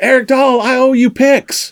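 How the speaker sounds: put-on very high, loud, slow, drawn-out holler. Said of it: "he's hollering at me from across the bar".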